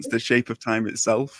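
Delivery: ordinary talk, nothing marked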